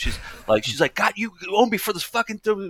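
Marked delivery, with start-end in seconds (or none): 0.9-2.7 very high, screeching, outraged shrieking tirade. Retelling a woman at a show swearing at the speaker: imitating a woman screaming. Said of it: "she's screaming at me".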